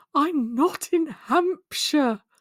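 high, very slow, stretched-out shout. Retelling a character's shouted line on the phone: imitating Helen shouting. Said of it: "I loved it when Helen shouted".

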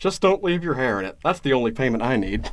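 charmingly delivered put-on cartoon dad voice. Recapping a King of the Hill episode, quoting Hank's reply in a Hank Hill voice. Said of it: "need to stop with the Hank voice?".

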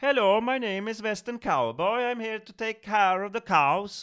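strange European accent, very high and loud. Explaining that many early Hollywood actors came from Europe, imitating a strange European accent. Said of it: "så att det lät konstigt".

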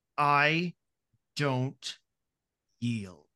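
through clenched teeth. Voicing a character's reply as she looks at the listener: through gritted teeth. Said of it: "through her gritted teeth look at you and go".

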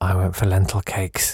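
very quiet, hushed, muttered under the breath. Reading out a message, imitating someone speaking very quietly. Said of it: "Ian just said very quietly".

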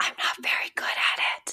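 hushed, soft, breathy, almost whispered. A therapist admitting she is not good at being vulnerable, said quietly. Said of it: "Do you notice I have to say that like quietly?".

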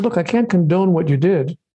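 normal talking voice

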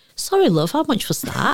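put-on Manchester accent laid on thick. Retelling their usual reply to someone speaking loudly, in broadest Mancunian accent. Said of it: "Mancunian accent".

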